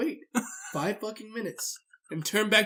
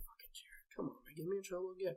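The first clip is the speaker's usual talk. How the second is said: acted-out, very quiet, hushed, angry muttering; 16 dB quieter than usual. Retelling grumbling while playing Xbox, imitating own angry grumbling. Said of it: "pissed as shit".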